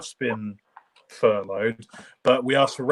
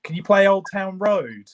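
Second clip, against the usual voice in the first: put-on little girl voice, high, drawn-out shouting; 7 semitones higher than usual. Retelling a little girl's request from the front at a gig: imitating a girl shouting. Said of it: "she just kept shouting".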